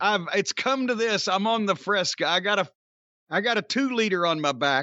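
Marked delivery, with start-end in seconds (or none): none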